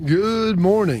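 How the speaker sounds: very high-pitched, bursting with enthusiasm. Returning the morning greeting on air: very enthusiastic. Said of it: "That was very enthusiastic".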